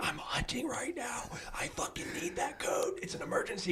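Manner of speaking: urgent, hushed, barely voiced whisper. Retelling a call to the wife from a tree stand: imitating own whisper. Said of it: "Why are you whispering?".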